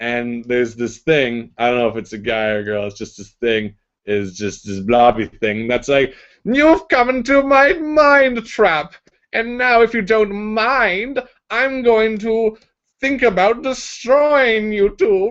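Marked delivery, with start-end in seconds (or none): 6.4-15.3 very high, slow, grating, irritating evil villain drawl. Storyteller voicing a blobby thing speaking from the ceiling, in an evil irritating voice. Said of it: "says this evil voice, uh, irritating voice from the ceiling".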